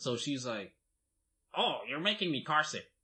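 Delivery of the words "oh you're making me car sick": put-on woman's voice.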